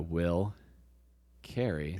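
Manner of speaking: very slow, drawn-out delivery. Recounting how he told his first joke, very slow delivery. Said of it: "I would just go really slow".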